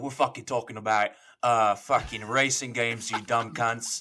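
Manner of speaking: slow, attempted Australian accent. Asked by the host to announce the topic in an Australian accent. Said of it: "in the your best Australian accent".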